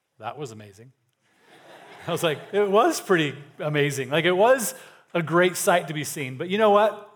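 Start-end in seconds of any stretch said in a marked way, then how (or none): 0.2-1.0 very quiet, low, dry deadpan. Retelling what another guy on the trail said after they made eye contact; retelling a deadpan remark. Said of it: "kind of like in a deadpan voice".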